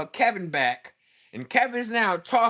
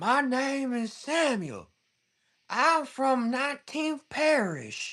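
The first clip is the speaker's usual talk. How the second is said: put-on elderly Southern-accented voice; 7 semitones higher, 4 dB quieter than usual.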